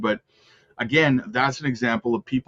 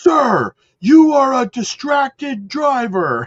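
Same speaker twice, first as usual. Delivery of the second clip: very loud, very high, drawn-out scolding yell; 13 semitones higher, 8 dB louder than usual. Speaker quotes a man who suddenly escalated while talking to him, retelling a yell. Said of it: "and he's yelling".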